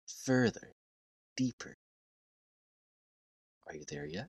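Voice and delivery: very quiet, soft, soothing, hypnotic lulling voice. Signing off to listeners as they fall asleep, soothing voice. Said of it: "Listen to my soothing voice".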